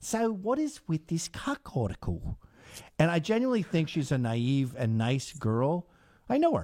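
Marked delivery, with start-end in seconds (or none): 0.0-2.4 odd put-on blend of Australian and American accent. Retelling an interview question, imitating Sydney's weird Australian American accent. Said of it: "with her weird, like, Australian American accent".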